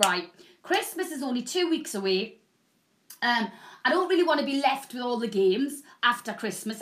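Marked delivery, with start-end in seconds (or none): none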